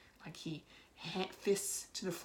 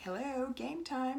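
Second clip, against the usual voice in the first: creepy, high, pitched-up showman voice; 8 semitones higher than usual. Recounting an actor's line as the maestro; creepy Maestro voice. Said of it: "he says it in this, like, really creepy voice".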